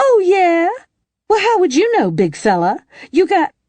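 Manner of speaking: loud, very high, swooping falsetto horse voice. Narrator reads Wren speaking for the mare, in a loud falsetto. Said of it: "said in a loud falsetto".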